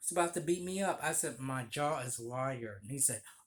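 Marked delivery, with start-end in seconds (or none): none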